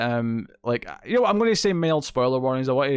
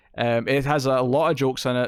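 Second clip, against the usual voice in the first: usual speaking voice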